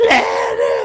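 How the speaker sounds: play-acted very low, deep, booming bellow. Telling how a woman complained he only ever screams for his wife, speaker is imitating his own yell. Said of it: "I would yell for her".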